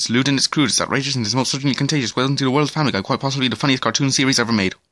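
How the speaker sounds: reading aloud at top speed, rattled off. Reading the Family Guy Season six blurb aloud, reading very fast. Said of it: "I could read that very fast".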